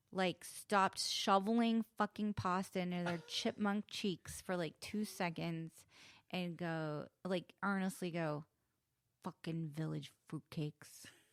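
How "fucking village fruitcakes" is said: low, menacing mutter under the breath. Retelling what a mafia-looking diner said in a restaurant: imitating a menacing mutter. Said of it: "Like menacingly, like under his breath".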